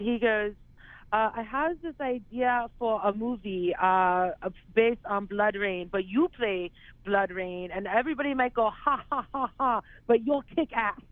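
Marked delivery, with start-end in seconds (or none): 1.4-10.9 fake, poor German accent, pitched high. Retelling what a man said to him, in the worst German accent. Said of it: "I'm going to do the worst German accent for you right now".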